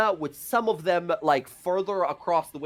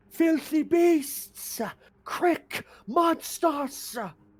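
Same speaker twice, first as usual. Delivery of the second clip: very high, strung-out, drawn-out cursing; 12 semitones higher than usual. Voicing a captive screaming profanities at the party: screaming insults. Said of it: "he's just screaming profanities".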